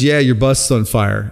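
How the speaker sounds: usual speaking voice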